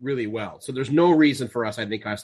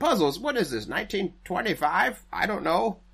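high, silly put-on voice. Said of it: "I don't know why I use that voice either".

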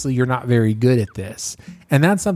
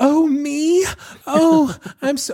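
mocking put-on nervous surprise and modesty, higher; 14 semitones higher than usual. Mocking someone put on the spot: imitating fake nervous surprise. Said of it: "for them to do the fake".

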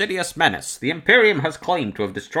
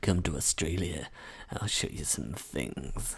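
mock menacing voice, lower and quieter; 11 semitones lower, 12 dB quieter than usual. Repeating the other speaker's line back: imitating a menacing line. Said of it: "sounded, like, really, really menacing".

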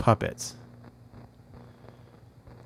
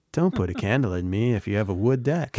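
usual speaking voice

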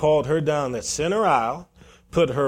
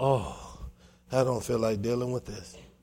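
play-acted sigh, low and soft; 4 semitones lower, 8 dB quieter than usual. Recounting how a man reacted before a girl came over, imitating a sigh. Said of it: "dropped his head and sighed".

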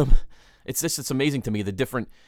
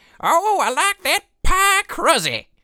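put-on very high, very slow Alabama old lady voice; 6 dB louder than usual. Imagining whoever said pie crusy, in a put-on old lady voice. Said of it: "whoever said it would say it in a voice like this".

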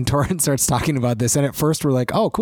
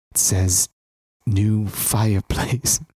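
whispered, lower; 5 semitones lower than usual. Telling the words of a note to another speaker: whispering. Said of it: "I'm going to whisper it to you now".

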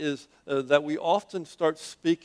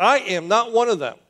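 very loud, forceful, emphatic delivery; 7 semitones higher, 8 dB louder than usual. Speaker retells Peter answering a woman who accuses him, retold emphatic vow. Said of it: "he says with an emphatic voice".

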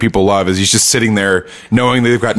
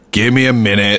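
cool, unfazed, unbothered tone. Host retelling a scene where police knock on the door, in Mike's voice. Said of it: "in his mic voice".

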